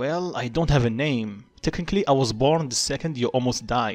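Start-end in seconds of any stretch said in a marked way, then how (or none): none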